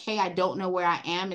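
plain

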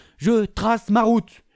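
je trace ma route dragged out slowly. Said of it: "mon gars, je trace ma route".

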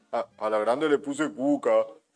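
low-pitched cartoon-character voice. Repeating a joke line in a Homer Simpson voice. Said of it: "así. ... Con esa voz".

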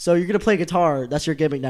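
ordinary talk

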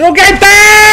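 high-pitched shouting.

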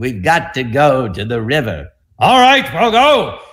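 booming movie-star voice. Retelling a line from the Moses soundstage, booming Charlton Heston impression. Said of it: "his voice is booming off the soundstage walls".

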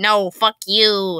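strange, odd monster creature voice. Reading a story aloud, voicing a creature's retort: oddly high-pitched creature voice. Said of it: "replies the creature in an oddly high-pitched voice".

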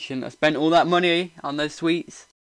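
smug, gloating parent voice. Speaker shows how they sound to Emily, in a gloating parent voice. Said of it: "like a gloating parent".

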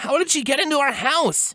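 anxious, partly panicked, rising panic. A narrator reads a character's question, slipping partly back into panic. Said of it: "slipping partially back into a state of panic".

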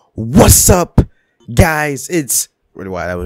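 loud, hyped delivery. Streamer opens the stream greeting viewers, loud hyped greeting. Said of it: "That was loud".

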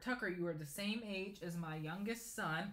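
ordinary talk

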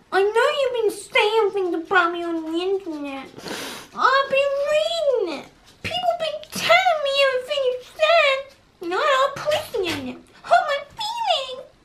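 very high, put-on babyish voice. Playing a pretend game with Rosie, talking to her in a baby voice. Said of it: "I do this baby voice and I go".

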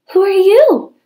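high, gasping, gasped-out delivery. Cindy Ellen, facing an old lady who has just fired a pistol, gasping. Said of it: "gasped Cindy Ellen".

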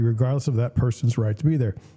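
ordinary delivery

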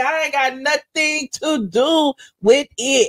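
slow, deliberate, drawn-out delivery.

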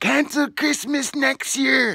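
shrill, very high, acted-out yell. The speaker quotes a man yelling back at him while being towed: retelling a yell. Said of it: "he's yelling back at me".

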